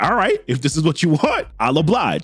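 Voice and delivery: normal talking voice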